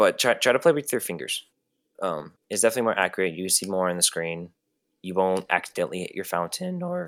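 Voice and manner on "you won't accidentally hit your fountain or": soft voice, cracking and breaking mid-line. Giving tips on playing on an iphone, voice cracking. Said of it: "voice crack".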